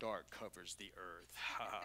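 very deep, very quiet trailer narration voice. A speaker reading a verse aloud to listeners, in a deep movie-trailer voice. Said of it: "like those trailer movie deep voices".

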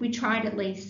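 plain

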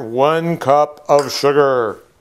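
grand, loud, dramatic theatrical delivery. Cooking blueberries for viewers, in a dramatic voice. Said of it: "That was my dramatic voice".

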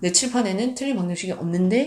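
normal talking voice

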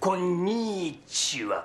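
konnichiwa drawn out very slowly, carefully spoken.

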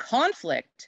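CONflict, first syllable stressed, wide pitch range.

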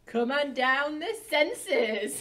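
loud, high-pitched quiz show announcer voice. Moving on to the next topic, the speaker announces it in a game show host voice. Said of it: "That was so much like a game show host".

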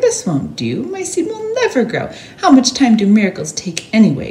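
high outcry, voice leaping and swooping up and down. Narrator reads Mortimer's line as rain soaks his seed, crying out. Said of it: "cried Mortimer".

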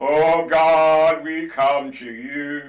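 put-on pious reverent tone, "you" drawn out. Speaker mocking how people change their voice in prayer, put-on religious prayer tone. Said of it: "We put on our religious tone".

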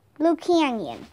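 plain reading voice

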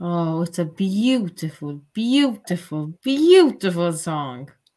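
loud, drawn-out, sarcastic, insincere gushing. Opening the panel's review of Cyprus in semifinal one: sarcastic. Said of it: "Can you see my sarcasm? Can you hear it?".

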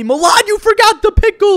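very high, shrill, all-out, top-of-lungs scream. Speaker retells how a friend screamed at him: retelling a top-of-lungs scream. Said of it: "at the top of his lungs, he screamed at me".

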